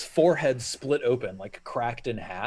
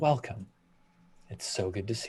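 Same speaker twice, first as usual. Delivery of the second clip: dulcet, soft, resonant, sonorous tones; 3 semitones lower, 7 dB quieter than usual. Announcing a three-minute break, previewing the welcome listeners will hear: Saloon's sonorous, dulcet tones. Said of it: "dulcet tones of Saloon saying".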